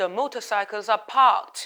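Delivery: heavy British pronunciation. Reading out the answer to a picture question, in a strong British accent, r dropped. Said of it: "알 발음을 전부 탈락해서 영국식 발음 강하게".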